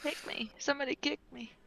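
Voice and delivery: soft, high, sleepy mumbling under the breath. Voicing a character talking in her sleep: murmuring under her breath. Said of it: "kinda murmur that under her breath".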